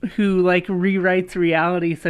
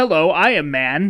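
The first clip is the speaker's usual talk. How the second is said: slow, sneering stock-hero impression. Mocking the male voice actor of the game's hero: mocking male Shepard's voice. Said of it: "the guy who just sounds like".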